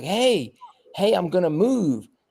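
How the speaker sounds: put-on high, drawn-out yell, calling out loudly. Retelling calling out to people sitting on a trailer: retelling a yell. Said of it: "yelling at 'em".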